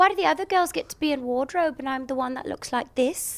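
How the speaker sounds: put-on Geordie accent. Asked to repeat it, the speaker redoes the line: Geordie accent. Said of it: "Can you do that again?".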